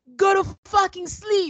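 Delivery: acted-out, very high yell. Retelling what Michaela yelled at him: imitating someone yelling. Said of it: "Michaela is yelling".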